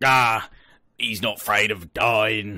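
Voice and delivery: slow, drawn-out orc monster voice. Retelling a man's reply to a goodbye, the speaker does an orky voice. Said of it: "in an orky voice".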